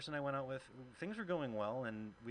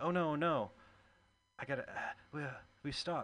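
put-on panic, higher and slower; 4 semitones higher, 5 dB louder than usual. A comedian acts out a woman's reaction to hearing her door open: mock panic. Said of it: "she starts panicking".

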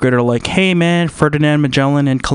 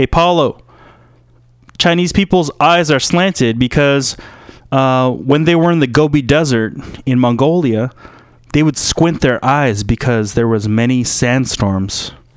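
ordinary delivery

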